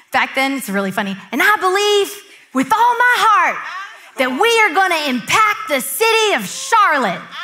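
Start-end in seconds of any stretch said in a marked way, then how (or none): 1.3-7.2 put-on loud, high-pitched country accent, preaching style. Retelling an early sermon with passion: Stephen Furtick's young country accent. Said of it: "he has this country accent".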